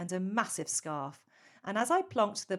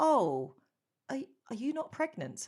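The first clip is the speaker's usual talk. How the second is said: put-on hesitant, unsure voice, high, much less confident; 5 semitones higher than usual. Retelling a man's reply after his congratulations fell flat: imitating an unsure voice. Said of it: "I screamed".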